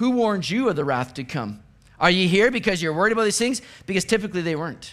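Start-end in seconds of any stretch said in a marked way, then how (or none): 0.0-3.6 lightly sarcastic, jabbing tone. Retelling John's question to the religious leaders: sarcastic, imitating John. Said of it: "John kind of sarcastically says".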